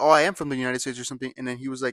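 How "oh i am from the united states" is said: ordinary talk, nothing marked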